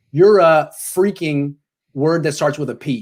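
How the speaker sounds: ordinary talk, nothing marked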